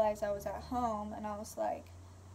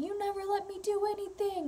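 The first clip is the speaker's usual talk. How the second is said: put-on very high, shrill, rage-filled screaming; 10 semitones higher than usual. Recounting a scary incident, the speaker is retelling a man's screaming. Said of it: "imagine a grown man screaming that".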